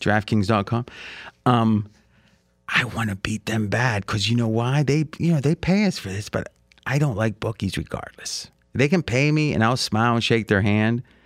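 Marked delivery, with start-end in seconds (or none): 0.0-8.5 whispering, lower pitch. Host mid-ad, whispering so the bookies paying for it can't hear. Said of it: "I'm whispering so they can't hear me".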